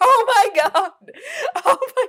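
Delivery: very high, very loud, distraught freaking-out scream. Retelling her friend watching main characters bleed out on Game of Thrones, imitating her distraught. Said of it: "she was distraught".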